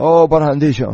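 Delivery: ordinary delivery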